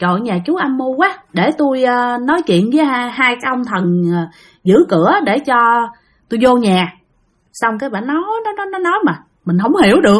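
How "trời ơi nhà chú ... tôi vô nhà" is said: ordinary talk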